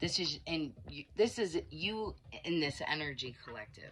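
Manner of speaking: disgusted, stuttering, stumbling over words. Addressing listeners about an energy collective, stuttering in disgust. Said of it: "I'm sorry I'm stuttering because I'm disgusted".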